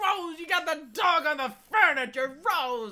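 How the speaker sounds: very high, loud, shrill, exasperated sitcom dad voice. Describing how someone yells, the speaker does a mock-frustrated sitcom dad impression. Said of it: "like a frustrated sitcom dad".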